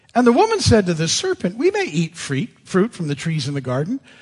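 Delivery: ordinary delivery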